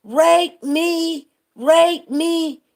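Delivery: very slow, stretched-out, high hollering, acted out. Retelling what a woman kept hollering during a stage act, imitating her hollering. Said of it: "She was hollering".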